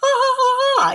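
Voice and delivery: very high dragon voice ha-ha laughing. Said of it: "I hear Tiaman laughing".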